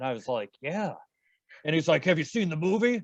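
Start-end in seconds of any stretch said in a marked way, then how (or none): 2.0-3.0 put-on shaggy old rocker hippie voice. Retelling a past conversation, imitating the man's voice. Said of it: "I'll do an imitation of his voice".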